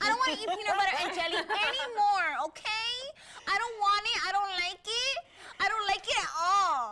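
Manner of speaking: imitated Miami accent, put on. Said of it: "she had the Miami accent, and so she talked like this".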